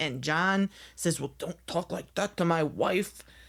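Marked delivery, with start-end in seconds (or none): 1.2-3.2 put-on cantankerous, crotchety, grumpy old-man voice. Retelling a reality show scene, imitating Lisa's husband John: crotchety old guy voice. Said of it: "Crotchety old guy".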